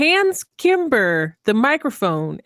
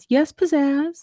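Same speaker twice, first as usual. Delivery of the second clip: put-on small, high little girl voice; 5 semitones higher than usual. Acting out Kimber answering Pizzazz: Kimber's little girl voice. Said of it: "she uses her little girl voice".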